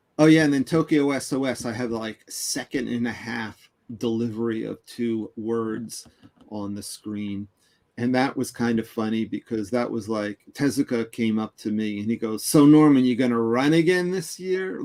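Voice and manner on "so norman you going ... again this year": play-acted, loud, heavy, needling sarcasm. Recounting a story, the speaker retells the question someone asked him, mimicking a sarcastic question. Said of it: "very sarcastic".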